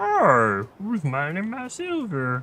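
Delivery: made-up high bear voice. Speaker voices a bear that came toward the noise, in a bear voice. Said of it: "But that's the bear's voice".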